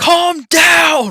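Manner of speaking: yelling as loud as possible. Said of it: "I just wanna yell".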